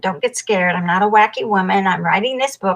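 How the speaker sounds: rushed, rattled-off, very fast delivery. Retelling own words to a man on a plane: imitating own fast talking. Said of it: "talked really fast".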